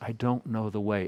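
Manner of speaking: put-on plaintive, pleading tone. Retelling Thomas speaking to Jesus: imitating a plaintive plea. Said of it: "he says it so plaintively to Jesus".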